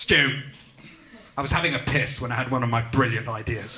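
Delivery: deep-voiced authoritative tone. Mocking ideas men, the speaker acts out a boss telling stu in a deep voice. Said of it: "deep voice".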